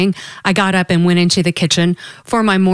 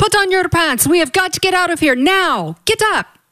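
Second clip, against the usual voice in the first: very high, shrill, frantic panicked screaming; 11 semitones higher than usual. A man running around the room in circles yells at the narrator, screaming. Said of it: "he screamed at me".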